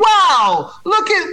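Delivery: high, excited read-aloud storybook voice. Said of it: "as soon as my voice tone change".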